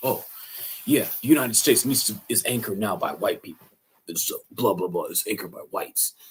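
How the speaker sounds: breezy, matter-of-fact, offhand bigoted voice. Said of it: "he talks like this".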